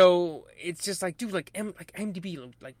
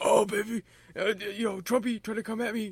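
put-on raspy, gravelly impression voice; 4 semitones higher than usual. Redoing someone's Fauci voice bit: raspy Fauci voice. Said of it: "anytime Mero does the Fauci voice, I lose it".

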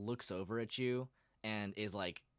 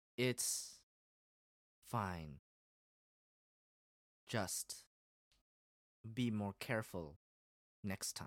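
peculiar, odd, off-kilter way of talking. Playing a character answering someone who knocked things off her desk, in strange speech. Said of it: "I will use my strange speech here".

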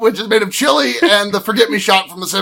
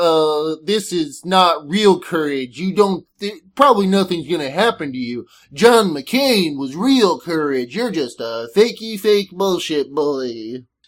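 put-on cartoon dog voice; 4 semitones lower, 4 dB quieter than usual. Speaker imitates someone he hates, quoting his put-down, in a Droopy the Dog voice. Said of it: "my like impression of people that I hate turns into Droopy the Dog".

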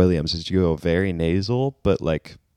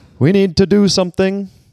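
shrill, high-pitched, loud voice that misses; 14 semitones higher, 8 dB louder than usual. Attempting an impression but slipping into another: bad Trump impression. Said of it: "I'm doing, like, Bernie Trump".

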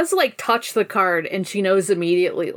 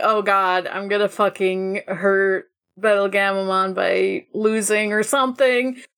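normal talking voice

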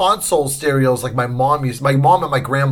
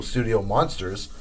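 ordinary talk, nothing marked

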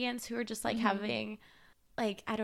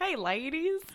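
high, nasal put-on Southern accent; 5 semitones higher than usual. Picturing a Southern man in a truck greeting the women, nasally Southern accent. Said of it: "That was like a nasally Southern accent".

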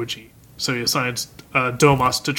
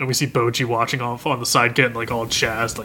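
ordinary talk, nothing marked

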